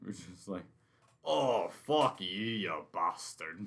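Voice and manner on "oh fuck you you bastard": very slow, silly put-on Russian or Scottish accent. Recalling a running bit with the other speaker, the speaker repeats it in a fake russian or scottish accent. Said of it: "something with the Russian accent, maybe the Scottish one".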